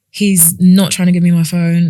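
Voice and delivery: ordinary delivery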